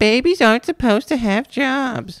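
very high, shrieky, screeching, taunting delivery. Nero mocks Klaus by repeating his words back, mocking high shrieky Klaus mimicry. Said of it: "the man mimicked in a high, shrieky voice".

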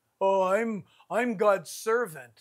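smug self-important tone. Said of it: "What are you conceited about?".

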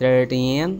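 put-on thirteen with the -teen syllable stressed. English lesson on numbers ending in t: thirteen stressed on last syllable. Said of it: "we should put stress the ending T in".

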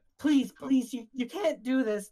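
crying and freaking out. Voicing a woman while someone holds the door shut: panicked, crying plea. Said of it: "And she's just like, and she's just like freaking out, and she's just crying, and she's like, "Please, please, my daughter!"".

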